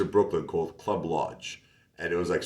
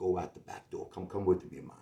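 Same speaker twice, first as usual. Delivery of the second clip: put-on Jamaican man's accent; 8 dB quieter than usual. Retelling what a Jamaican guy at the club said: imitating a Jamaican guy. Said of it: "He says".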